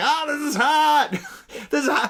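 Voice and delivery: mock whine, high and slow.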